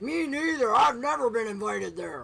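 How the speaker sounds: creaky, rough, loud dwarf character voice. Narrating a game scene, a dwarf in the corridor speaks up, dwarven voice. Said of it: "A dwarven voice says".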